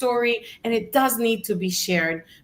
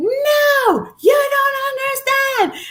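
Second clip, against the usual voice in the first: mock shrill, very slow desperate yell, long "no"; 6 dB louder than usual. Retelling how a woman yelled at him during his first motivational speech, retelling her yell. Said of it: "she yelled at me".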